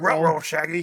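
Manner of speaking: put-on cartoon dog voice. Joking that another speaker sounded like a cartoon: Scooby-Doo voice. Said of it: "I thought [name] was doing a Scooby-Doo impression".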